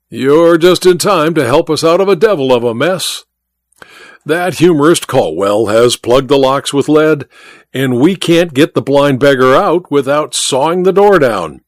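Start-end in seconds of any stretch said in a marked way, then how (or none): none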